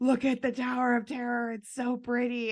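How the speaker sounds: excited, high, gasping delight.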